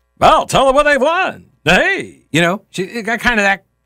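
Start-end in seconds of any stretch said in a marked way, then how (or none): 0.2-1.5 showy, high, fast game-show-host patter. Describing a 25-year-old woman's affected delivery, doing a game show host voice. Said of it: "almost like a game show host".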